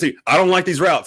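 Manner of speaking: high-pitched screaming. Retelling watching a play on TV: retelling a scream.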